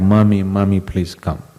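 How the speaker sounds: ordinary delivery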